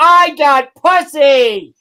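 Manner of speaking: excited, shrill, very high, very loud screaming. Imagining someone bragging to everyone: screamed. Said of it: "screaming it from the rooftops".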